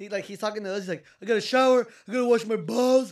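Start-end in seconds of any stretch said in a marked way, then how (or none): 1.2-3.1 very loud, booming, carrying delivery. Retelling what someone said while talking to them: imitating someone talking loudly. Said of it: "All loud".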